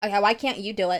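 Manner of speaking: put-on rude tone. Retelling how the manager answered a customer's request: imitating a rude tone. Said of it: "What is with that tone? Like, why are you being so rude?".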